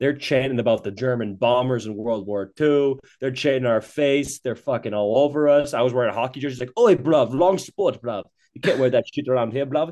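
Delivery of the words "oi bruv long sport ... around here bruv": put-on British-accented speech. Recounting a night among British fans, quoting one of them, imitating a British accent. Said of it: "Turns out it was a British watch party".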